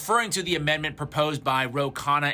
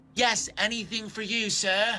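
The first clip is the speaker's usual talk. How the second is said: sudden put-on British accent, doting and pitched up; 7 semitones higher than usual. Acting out an imagined reply to Netanyahu: British accent. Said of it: "I don't know why a British accent came out there".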